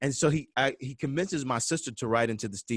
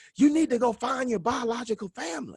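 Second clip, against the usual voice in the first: very high-pitched shouting; 12 semitones higher than usual. Retelling how dad started yelling at the twins during the game: imitating dad yelling. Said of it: "he starts yelling at me and my twin sister".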